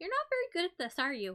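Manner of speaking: put-on high, loud little girl character voice. Voicing a rescued kid teasing a climber who fell: kid character voice. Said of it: "The kid that you've already rescued looks down at you and she goes".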